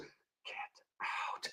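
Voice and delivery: haunting, hushed, spooky ghost-voice whisper. Joking that a voice greets a player entering the locker room: spooky haunting voice. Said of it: "there's a voice".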